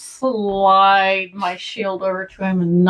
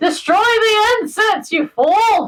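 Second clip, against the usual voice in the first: very high-pitched, shrill shout; 14 semitones higher than usual. Speaker yells at the incense they blame for it all: yelling. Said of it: "I'm yelling at that".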